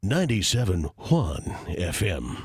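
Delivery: very low, deep, slow, drawn-out put-on voice. Reading a radio frequency the way Bird would: Bird impression. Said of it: "or I could say it like Bird".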